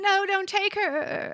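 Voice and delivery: put-on limp, half-hearted, feeble, very high, very slow. Retelling a character's protest as she is taken: imitating a feeble protest. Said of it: "gives the weakest sauce".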